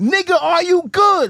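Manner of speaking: put-on very high, slow, drawn-out scream. Retelling what a stranger yelled during a night encounter: imitating someone screaming. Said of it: "He starts screaming at me".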